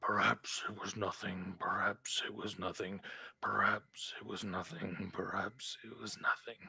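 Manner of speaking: murmured repeatedly, on a loop, to oneself. Game master voices Toro as the party's senses return: murmuring. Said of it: "You hear a murmuring".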